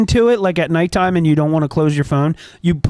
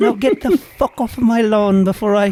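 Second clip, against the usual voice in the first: put-on elderly Irish woman's voice and accent; 4 semitones higher than usual. A character who has just been handed candy answers, old irish lady impersonation. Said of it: "your old Irish lady impersonation".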